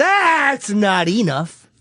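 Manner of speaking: heated, sharp delivery. Showing how a tv husband yelled at his wife: imitating someone yelling. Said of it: "the way I would yell is".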